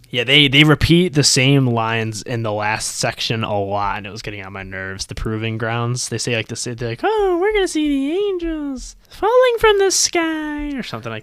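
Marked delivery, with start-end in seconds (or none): 7.0-10.7 put-on creepy little girl voice. Quoting the Little Sisters' repeated lines: imitating a Little Sister's voice. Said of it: "You're pretty good at that voice".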